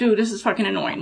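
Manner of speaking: usual speaking voice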